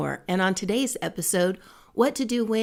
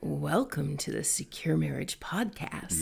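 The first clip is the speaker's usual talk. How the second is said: mock-sexy voice, lower and quieter; 5 semitones lower, 7 dB quieter than usual. Joking with the co-host, giving the podcast welcome in a mock-sexy voice. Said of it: "That's a whole different podcast".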